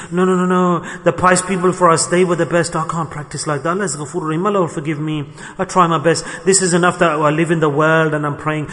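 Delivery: ordinary talk, nothing marked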